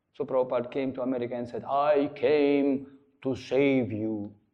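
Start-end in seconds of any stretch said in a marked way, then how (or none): 1.6-4.3 put-on very slow, drawn-out accented English. Retelling what Prabhupada said on coming to America: Prabhupada's accented pronunciation. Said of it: "his pronunciation was like that".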